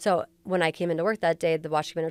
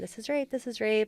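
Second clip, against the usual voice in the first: put-on screaming, high and repeated; 5 semitones higher than usual. Recounting a woman being brought into the station, imitating someone screaming. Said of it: "she's still screaming the whole time".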